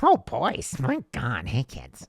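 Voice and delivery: swooping put-on ad lady voice. Playing the ad lady character, greeting the boys: ad lady character voice. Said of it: "Hey, ad lady".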